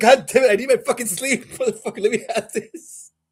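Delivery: play-acted, very high, exasperated angry outburst. Retelling kicking a dog off the bed: imitating himself getting pissed. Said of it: "I'm getting pissed".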